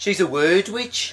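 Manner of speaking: slow, high mock Kidderminster accent, drawled. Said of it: "You do that very well".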